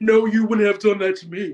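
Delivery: deepened, low, dropped voice. Retelling a reality show argument, imitating Robin in a deeper voice. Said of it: "I have to deepen my voice".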